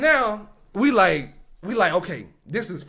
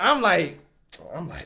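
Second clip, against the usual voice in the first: ordinary talk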